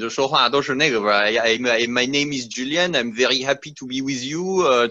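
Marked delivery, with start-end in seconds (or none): 1.2-4.9 put-on fast, rattled-off, thick French accent. Speaker mimics how french people in their industry speak english, imitating thick french accent. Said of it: "很很浓的法语口音".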